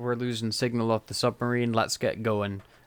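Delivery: plain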